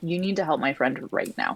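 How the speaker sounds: hushed, insistent whisper-level voice. A player's character stops yelling and steps toward a man, speaking very quietly. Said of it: "say very quietly".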